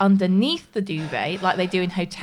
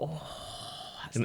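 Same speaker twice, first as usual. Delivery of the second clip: very hushed, breathy, very soft, comforted sigh; 5 semitones lower, 16 dB quieter than usual. Retelling how the other speaker got into bed: imitating a typical man. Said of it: "slid down and went".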